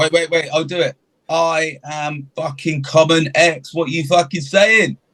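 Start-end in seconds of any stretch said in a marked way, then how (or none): 1.3-4.9 rock star voice, much higher pitch. Guest asked by the host for his best rock star line: rock star voice. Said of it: "Give us your best rock star".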